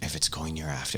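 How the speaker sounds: very quiet. Speaking in character to a father set on saving his son, very quiet. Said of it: "I very quietly say".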